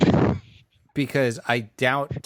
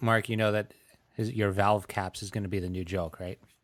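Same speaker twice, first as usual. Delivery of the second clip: usual speaking voice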